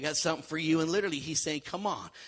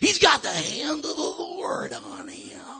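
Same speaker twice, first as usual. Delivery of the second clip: wrestling announcer voice, much higher pitched; 13 semitones higher, 13 dB louder than usual. Repeating a line from a talk, the speaker bursts into a showy bellowing announcer delivery, in a wrestling announcer voice. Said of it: "that was my World Wrestling Federation voice".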